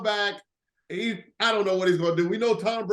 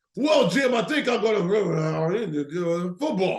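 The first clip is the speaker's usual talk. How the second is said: put-on drunk, slurring commentator voice. Imitating a commentator who sounds drunk: drunk, slurring Tony Romo impression. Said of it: "he's slurring his speech".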